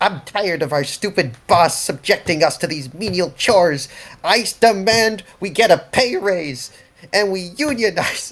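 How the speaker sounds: very loud, high, ratty creature voice. Casting a minor illusion in a game, the player mimics the were-rat's voice. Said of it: "a minor illusion in the exact rat's voice".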